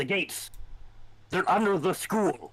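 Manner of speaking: high, tight voice, desperate and alarmed. In a scene with explosions and screaming, a character warns the group, tight with desperation. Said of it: "his voice is tight with desperation".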